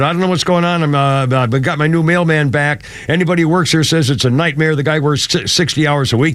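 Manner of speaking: usual speaking voice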